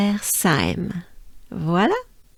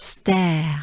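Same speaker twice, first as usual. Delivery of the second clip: stare whispered with French R. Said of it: "here it's part of".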